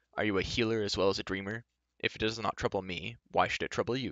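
ordinary delivery

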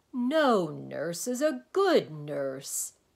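very loud, very slow, booming, swooping laughter. The Dynne interrupts the doctor's story; laughing while speaking. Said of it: "doubling up with laughter".

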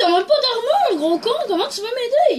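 angry, high-pitched, loud scolding tone.

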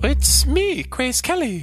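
put-on woman's voice. Pretending to be Grace Kelly to an old man: imitating Grace Kelly. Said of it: "forcing me to act as Grace Kelly".

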